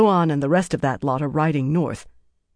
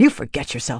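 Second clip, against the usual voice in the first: sharp, cutting delivery; 4 semitones lower than usual. A woman answers another woman who just called her a fool, sharp. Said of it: "Marilyn said sharply".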